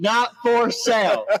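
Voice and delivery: mock very high, loud, shrieking scream. Repeating that the posted art is not for sale: screaming. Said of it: "Sorry, I'm screaming".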